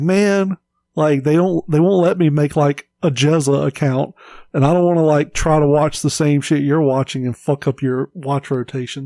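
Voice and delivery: ordinary talk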